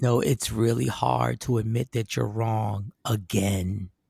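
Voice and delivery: very low, soft half-whisper voice. During a role-played argument, saying it in a half-whisper voice. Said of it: "then I say it in my whisper voice".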